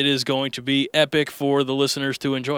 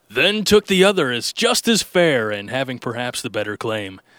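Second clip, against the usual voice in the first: on-air announcer delivery. Reading a poem aloud the way he announced on radio, radio announcer voice. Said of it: "I'll read in the voice that I would be actually announcing when I was on radio".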